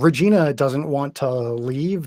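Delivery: ordinary delivery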